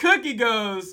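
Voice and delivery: ordinary talk, nothing marked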